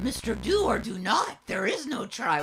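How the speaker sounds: put-on little alien sage voice. Quoting a line for a co-player during a game: Yoda voice. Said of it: "Was that a good enough Yoda voice?".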